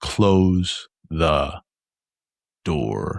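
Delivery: angry, gritted teeth, each word enunciated, bitten off. Voicing a character giving an order to a player, quiet, enunciated through gritted teeth. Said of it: "He quietly and he kind of enunciates every word".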